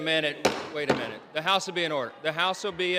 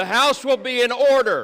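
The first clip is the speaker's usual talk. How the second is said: raised, angry, irritated voice losing patience; 6 semitones higher, 7 dB louder than usual. Calling a loud, screaming House to order: getting angry. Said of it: "He's getting pissed".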